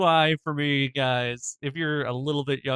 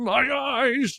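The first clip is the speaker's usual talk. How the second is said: mock tongueless speech, higher; 11 semitones higher, 3 dB louder than usual. Retelling a movie scene, quoting a man whose tongue was taken: imitating a man with no tongue. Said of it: "why I'm sounding like this".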